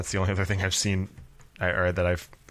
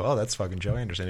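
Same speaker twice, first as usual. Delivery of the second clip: normal talking voice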